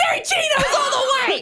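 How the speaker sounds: high, fast, excited shout broken by laughter.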